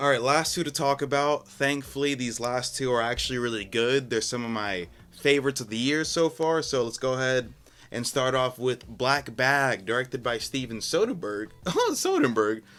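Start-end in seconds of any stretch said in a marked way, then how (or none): 11.7-12.6 high, breaking, cracking voice. Speaker introducing a film's director by name, voice cracking. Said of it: "Why did my voice crack?".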